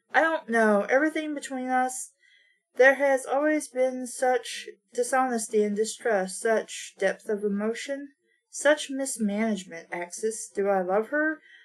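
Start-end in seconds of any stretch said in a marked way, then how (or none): none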